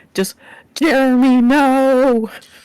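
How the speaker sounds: loud, high sobbing giant voice, no stretched long. Game master voices a giant as it sobs in Common, sobbing giant. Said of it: "you kind of hear the sobs in uh um in common".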